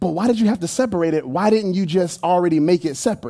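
ordinary delivery

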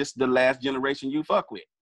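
ordinary talk

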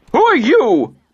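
shrill, piercing, very high-pitched voice. A man demands to know who pushed him aside: shrill, demanding. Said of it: "his voice shrill".

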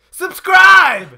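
excited, upbeat, enthusiastic delivery. Showing how to ask viewers to subscribe without sounding desperate: excited, upbeat "Subscribe!". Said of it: "You gotta sound excited".

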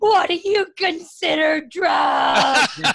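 hysterical crying through the words, high and loud. Retelling a traffic stop, the speaker voices the woman's answer to the cop, imitating hysterical crying. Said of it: "she starts hysterically crying".

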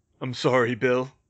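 ordinary delivery

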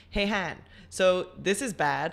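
ordinary talk

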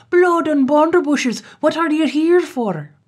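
furious raging shout, pitched very high. Reading a tale aloud, the ferryman bursts in: shouting in a rage. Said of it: "in a rage, and he shouts out".

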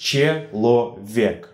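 slow, syllable-by-syllable delivery. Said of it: "The examples for these rules are".

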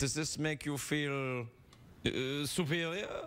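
put-on slight Austrian accent. Playing a therapist questioning a tall patient, with a slight austrian accent. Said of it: "I've got a slight Austrian accent".

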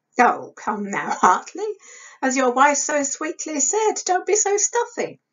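teasing, amused chuckle. A man answers a colleague's sharp question about their work: chuckling a little. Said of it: "Frank chuckled a little".

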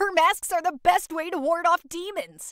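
eager, thrilled chatter, quick and high-pitched. Frog, planning a festival outing with Bat, speaks excited.

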